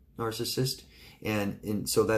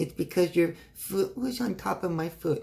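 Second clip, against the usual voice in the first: put-on small, high, childlike little girl's voice; 8 semitones higher than usual. Reading a letter quoting a partner's reply in a dark room: imitating a little girl's voice. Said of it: "In a little girl's voice".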